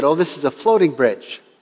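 plain

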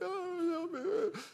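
very high, whimpering, crying whine. Retelling a hard moment, imitating own past whining. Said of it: "I'm whining".

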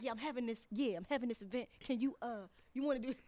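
put-on halting, stumbling old granddad voice. Retelling an event invitation again: imitating Mario like somebody's granddad. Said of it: "Got him sound like somebody's granddad".

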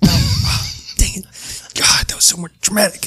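very high-pitched, mildly frustrated exclamation. Voicing a character who trips while walking away: a little frustrated. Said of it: "he gets a little frustrated".

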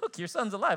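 mildly surprised. Acting out a man telling someone their son is alive: mock-surprised, a little. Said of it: "it was almost like a little bit surprised. Like".

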